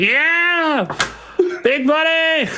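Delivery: put-on screaming, yelling old man voice. Voicing an old man in the crowd cheering a win: old man screaming. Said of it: "You hear that old man scream like".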